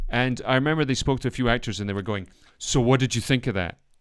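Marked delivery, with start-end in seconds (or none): none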